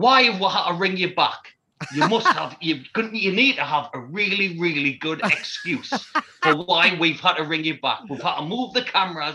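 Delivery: mock TV host voice, loud shouting. Retelling a TV host shouting at a caller: imitating Philip Schofield shouting. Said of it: "Philip Schofield shouting at the television".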